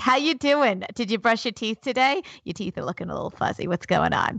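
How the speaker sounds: put-on New Jersey accent in a mom character voice.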